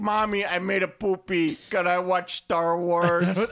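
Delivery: put-on very slow, high Jersey accent, "wars" drawn out. Podcaster imitates the co-host as a three-year-old, in a New Jersey accent. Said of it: "I don't think a three-year-old sounds like a dude from Jersey".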